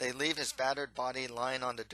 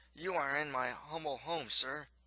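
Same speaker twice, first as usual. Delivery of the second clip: ordinary delivery, nothing marked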